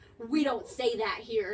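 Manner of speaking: put-on slow, brash elderly woman's voice. Retelling a voice heard while walking into a house, in a brash old woman voice. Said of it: "really brash old woman voice".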